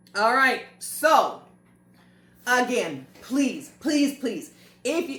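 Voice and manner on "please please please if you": open, begging plea with repetition. Asking viewers for help to keep doing the videos: begging. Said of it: "I sound like I'm begging".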